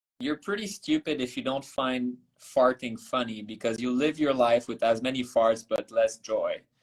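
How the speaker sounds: ordinary talk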